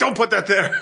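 high, laughing, snapping delivery.

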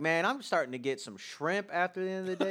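very loud, very high chatter. Retelling what a metro passenger said: imitating someone talking loudly. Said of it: "he just starts talking really loudly".

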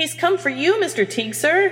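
very high, squawked interjection. Creevy chimes in to Mr. Teague: squawking. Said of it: "Creevy supplied with a squawk".

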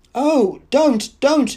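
very high, trembling, quavering voice. A woman protests while a man shakes her by the shoulders, tremulous protest. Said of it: "she protested in a voice made grotesquely tremulous".

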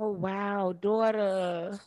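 worried, concerned, motherly tone. Gossiping about a celebrity couple's split, concerned mama voice. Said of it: "you sound like a concerned mama".

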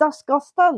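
put-on Scottish accent.

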